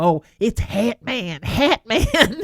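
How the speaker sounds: very slow, stretched Kentucky drawl. Imitating a friend who always talks about Hat Man: imitating a friend's Kentucky accent. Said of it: "she's got this Kentucky accent".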